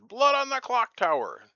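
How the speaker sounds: shrill, very loud, high announcer yell. Showing the yell they always opened their episodes with: yelled intro. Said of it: "I always started by that yell".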